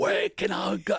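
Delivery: very high-pitched, loud, put-on British accent. Recalling an early comedy bit you did in a long blonde wig, in a put-on British accent. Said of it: "And I had a British accent".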